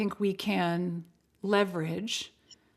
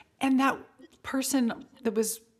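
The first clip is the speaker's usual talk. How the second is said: plain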